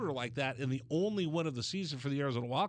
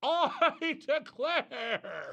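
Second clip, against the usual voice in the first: very high, shrill, proclaiming yell; 11 semitones higher, 3 dB louder than usual. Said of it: "stand on top of a mountaintop on TikTok and go".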